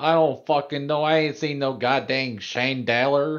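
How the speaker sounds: New York accent. Asked how New Yorkers say chandelier, the speaker answers in a New York accent. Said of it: "This this is a New Yorker thing".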